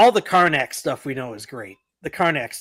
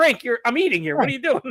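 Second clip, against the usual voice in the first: irritated, angry, high-pitched, annoyed scolding tone; 8 semitones higher than usual. Retelling a dinner story, imitating an angry Don Rickles. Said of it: "Rickles gets all pissed".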